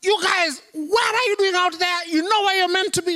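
very high, shrill, hollered shout. Picturing how Jesus might have called to the disciples: imagined Jesus shouting. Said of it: "He doesn't shout".

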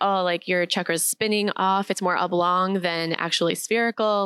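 plain

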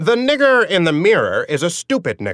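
screechy, shrill, syrupy and cloying put-on voice.

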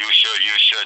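put-on big deep voice. Acting out the inner voice that says should: big deep voice. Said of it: "it's a big deep voice with a big long finger".

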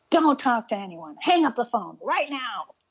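acted scary, urgent, high-pitched tone. Speaker recounts a man leaning over the stairwell ordering them off the phone: retelling a frightening command. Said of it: "just scared the bejesus out of me".

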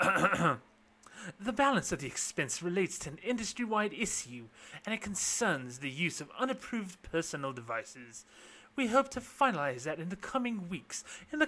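put-on British accent, official-sounding. Quoting what Borthwick said on a call with reporters: Borthwick in a put-on British accent. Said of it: "I'm going to use a British accent".

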